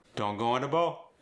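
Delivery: Cajun English accent. Repeating the teacher's example line: cajun accent. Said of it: "This Cajun R drop".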